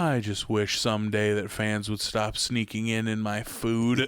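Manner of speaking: play-acted, low, flat, dry, unbothered deadpan. Retelling a scene from an animated show, in a flat Nebraska delivery. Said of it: "flatly just goes".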